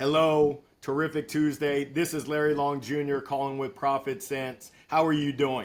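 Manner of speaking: flat, robot-like reading off a script. Retelling early sales calls read off a script: imitating robotic script reading. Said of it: "I read off of a script like I was a robot".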